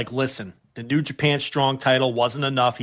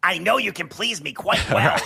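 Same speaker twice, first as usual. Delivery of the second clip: put-on puppet-like voice, higher pitch; 5 semitones higher than usual. Imagining a wrestler's text read aloud: imitating Seth Rollins' Muppet voice. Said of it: "with his Muppet voice".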